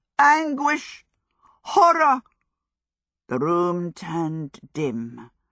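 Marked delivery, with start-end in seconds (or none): 0.2-2.2 very high, loud, passionate outcry. Spreading his arms wide after his hair turned ginger, a man yells. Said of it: "he yelled".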